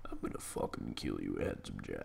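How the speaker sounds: hushed, breathy, action-hero style whisper under the breath. Threatening the villain Handsome Jack, attempting a Rambo impression. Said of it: "I try to do a Rambo".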